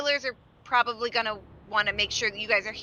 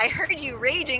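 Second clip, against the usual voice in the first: ordinary talk, nothing marked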